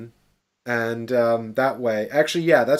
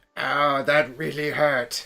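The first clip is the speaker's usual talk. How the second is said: put-on slow elderly man's voice; 3 semitones higher than usual. Speaker demonstrates their version of an old guy character: old man voice. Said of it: "my old guy is actually".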